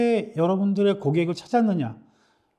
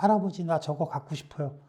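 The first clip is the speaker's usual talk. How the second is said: soft, pleading voice. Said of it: "외치는, 속삭이듯이".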